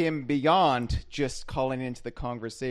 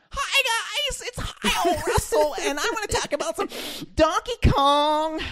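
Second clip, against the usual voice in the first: very high, squeaky, self-mocking voice; 4 dB louder than usual. Imitating how his voice sounds when he hears it played back: mocking own recorded voice. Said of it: "But then I hear it back".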